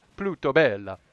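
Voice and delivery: bad, very loud, booming put-on Italian accent. Showing how they read a name in their head, in a bad Italian accent. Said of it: "not the bad Italian accent".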